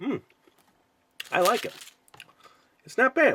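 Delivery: very high talk through full mouth, chewing. Taking a bite of a frosted donut on a product video, talking while chewing. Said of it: "I am eating it and I'm chewing it".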